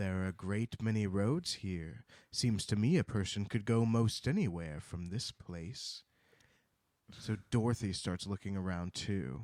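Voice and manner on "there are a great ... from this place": ominous tone, lower pitch. Retelling what a character says in a story: imitating an ominous tone. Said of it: "he just ominously says".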